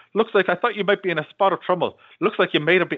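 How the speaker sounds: put-on worst-ever Irish accent. Quoting a film character's line to the Colonel character, bad Irish accent. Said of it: "The Irish guy with the worst accent ever".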